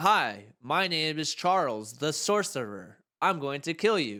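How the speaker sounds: slow, flat reading with no expression. Criticizing a game's voice acting, imitating actors flatly reading the script. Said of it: "like they were just reading the script".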